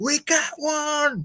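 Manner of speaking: put-on, very high, delighted, excited shriek. Retelling the Ghostbusters scene where the receptionist slams down the phone: imitating Janine screaming. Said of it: "slams down the phone and screams".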